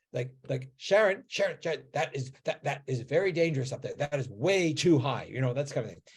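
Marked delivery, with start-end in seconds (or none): 0.7-5.2 alarmed, panicky, anxious calling voice. Retelling a mother calling to her four-year-old who climbed too high, imitating a panicked mom. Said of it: "more panic in mom's voice".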